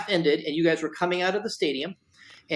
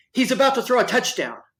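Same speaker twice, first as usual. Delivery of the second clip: put-on, high, loud, sudden yell; 7 semitones higher, 5 dB louder than usual. Telling the player about that rainy game, the speaker is retelling own yell. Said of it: "I stood up and I yelled".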